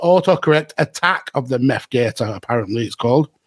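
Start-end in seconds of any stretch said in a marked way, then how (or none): none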